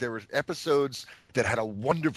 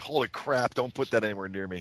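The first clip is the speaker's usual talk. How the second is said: ordinary talk, nothing marked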